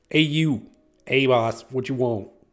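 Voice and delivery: put-on Boston accent delivered at full, very loud volume. Improvising a scene, doing a boston accent for an elf. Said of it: "somebody do a Boston accent so I can get this fucking elf".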